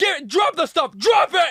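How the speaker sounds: very high, furious, unhinged shouting. Retelling confronting three guys stealing cards: retelling his own furious yelling. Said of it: "And I went nuts".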